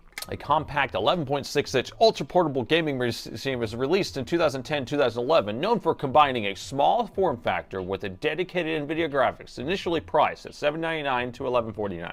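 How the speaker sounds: commercial announcer read. Reading out a laptop description someone else wrote, in an announcer voice. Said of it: "I have to say it in an announcer voice".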